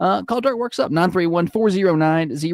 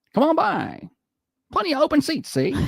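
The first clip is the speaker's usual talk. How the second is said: put-on very high, old-timey movie broadcaster voice; 10 semitones higher than usual. Insisting this is how they really talked, in an old-timey movie voice. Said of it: "I don't think they actually talked like that".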